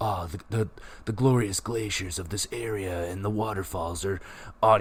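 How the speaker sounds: cool, calm, low, soft meditation-style narrator voice. Describing the narrator over the map parts, do his cool, soothing narrator voice. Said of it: "with his cool, soothing voice".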